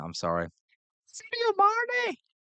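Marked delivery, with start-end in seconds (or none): 1.1-2.1 very high, slow, stretched-out bad mock Scouse accent. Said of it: "doing the accent".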